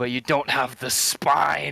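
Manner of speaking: very loud declaiming. A player's character speaks to a man crushed under his hammer: booming orating voice. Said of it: "I'm booming my voice as I talk".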